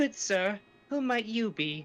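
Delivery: put-on refined lady voice. Imagining how a female character would sound, greeting someone: refined woman voice. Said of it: "You actually do a refined woman voice better than I do".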